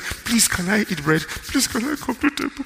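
mock crying child voice, high, tearful, desperate. Retelling a boy begging his father to come to the table, imitating crying and begging. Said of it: "and he's crying".

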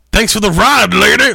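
very high, loud, nasty, big mean voice. Retelling someone thanking a lady for the ride: imitating a big mean voice. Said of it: "like with a big mean voice and everything".

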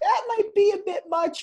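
very high, loud, squeaky put-on voice. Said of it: "And I was like".

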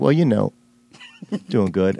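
acted, choked-up delivery with halting near-tears pauses. Retelling how Devon answers a greeting: imitating Devon getting choked up. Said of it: "Are you getting choked up right now?".

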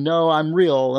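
acted eager, enthusiastic voice through a laugh. Retelling a telemarketer's answer to "are you a robot": imitating an enthusiastic reply. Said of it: "laughed and said enthusiastically".

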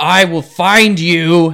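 very loud, drawn-out calling out. Voicing a dead wizard in red robes searching a silent mansion: calling out. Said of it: "he calls out and says".

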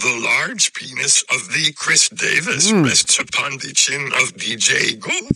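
put-on robotic character voice. Answering a welcome-back greeting, in a Robot Yoda voice. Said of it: "what's up, Robot Yoda?".

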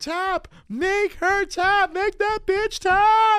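very high, very slow, drawn-out shouted screaming. Retelling watching the match on TV: retelling own screaming. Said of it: "I remember just screaming".

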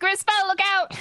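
shouting. Calling across a long distance to warn Grisvel, shouting a warning. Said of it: "You'd have to shout".

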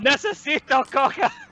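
mild, held-back, high-pitched yell. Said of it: "just yell".

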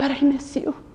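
hushed, soft whisper. Retelling God's quiet reply to a busy believer: imitating someone whispering. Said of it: "and he whispers".

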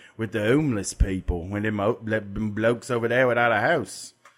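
put-on British accent, odd voice.

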